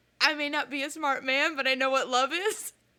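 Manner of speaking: usual speaking voice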